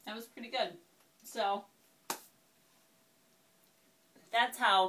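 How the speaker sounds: speaking with mouth full of food. Demonstrating after taking a bite of the cupcake: talking with mouth full. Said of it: "I have my mouth full".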